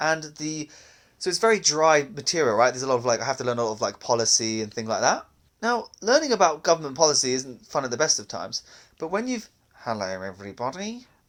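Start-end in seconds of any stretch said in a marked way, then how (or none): 9.7-11.0 low, dull, boring bureaucrat voice. Starting to imitate a boring civil service guy: imitating a boring civil servant's voice. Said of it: "before you do his voice".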